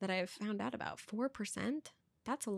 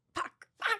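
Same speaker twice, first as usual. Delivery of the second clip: very high, self-annoyed cursing; 13 semitones higher, 3 dB louder than usual. Signing off an episode after fumbling a goodbye, the speaker is annoyed at oneself. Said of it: "Because I'm pissed at myself".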